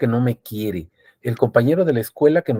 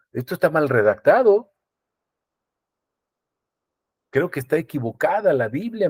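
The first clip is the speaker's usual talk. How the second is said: sarcastic, pretending to be earnest; 5 semitones higher than usual. Telling the brethren a bible verse is badly written, in a sarcastic tone. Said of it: "lo estoy diciendo con sarcasmo".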